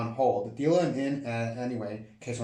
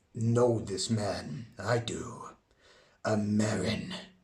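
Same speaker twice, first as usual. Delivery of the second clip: fantasy orc character voice, put-on; 3 semitones lower than usual. Narrating a story and voicing an orc character, in an orc voice. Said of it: "let me find my orc voice".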